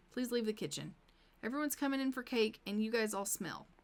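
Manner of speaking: usual speaking voice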